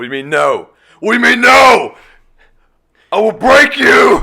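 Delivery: very high, very loud, shrill, mad screaming outburst. Retelling a voicemail like a Happy Gilmore scene: imitating someone yelling. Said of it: "He's yelling into a speaker".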